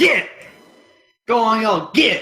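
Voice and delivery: high, shrill scream. Cracking a whip to send four of them running, screaming. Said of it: "cracks the whip like lightning and screams".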